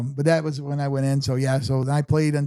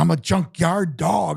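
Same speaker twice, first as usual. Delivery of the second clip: very slow, rough, rasping holler; 3 semitones higher than usual. Retelling a player biting the speaker at Nationals: imitating someone yelling. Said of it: "he starts yelling at me".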